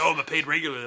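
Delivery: normal talking voice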